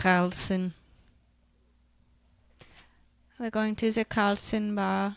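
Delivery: slow put-on accent, sort of German. Saying the name of a family bar aloud, put-on accent. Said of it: "What an accent".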